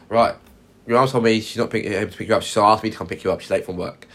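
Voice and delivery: ordinary talk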